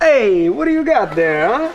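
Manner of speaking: put-on Italian accent put on for show. Showing off an accent to earn ten dollars: put-on Italian accent. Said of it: "I can do a perfect Italian accent. Watch and learn".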